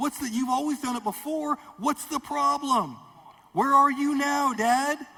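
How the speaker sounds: shrill, very high, very loud pleading scream. A child pleads with her father, acting out screaming at Dad. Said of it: "I'm screaming at you like".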